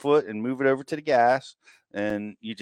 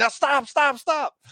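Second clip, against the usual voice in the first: mock loud hollering, very high-pitched; 14 semitones higher than usual. Retelling telling a new driver to stop: imitating hollering. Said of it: "now I'm hollering at him".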